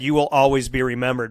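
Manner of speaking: ordinary talk, nothing marked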